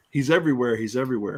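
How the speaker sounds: ordinary talk, nothing marked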